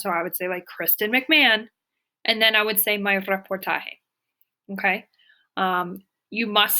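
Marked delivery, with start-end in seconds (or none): 0.7-1.7 plain, clear delivery. Showing students how to say a name on voicemail: nice and loud. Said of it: "say your name nice and loud".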